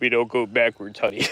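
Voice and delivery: very deep voice. Repeating a guy's funny line, in his deepest voice. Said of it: "the guy says in his deepest voice".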